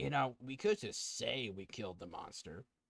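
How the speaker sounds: quiet half-whispered voice. Voicing Wolford as he half-whispers to a player: Wolford half-whispering. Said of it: "Wolford's gonna whisper to you".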